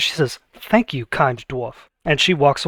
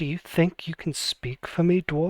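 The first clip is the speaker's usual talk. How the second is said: dead serious, fully earnest delivery; 8 dB quieter than usual. Voicing a red dragon disguised as a woman, full seriousness. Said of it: "with full seriousness says".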